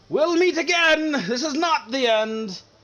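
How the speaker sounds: very high, loud shouted cry. Voicing a fleeing character's parting threat while escaping: shouted villain's parting line. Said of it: "you hear a shout".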